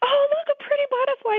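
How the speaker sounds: very high, sweetly thrilled, delighted coo. Telling how a woman excitedly spotted a lizard, mock-delighted cooing. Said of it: "like someone would say when they see a butterfly".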